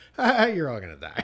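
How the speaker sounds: offhand line said quietly to oneself, throwaway manner. Retelling a Jaws scene of people heading out to hunt the shark: Richard Dreyfuss muttering under his breath. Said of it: "under his breath".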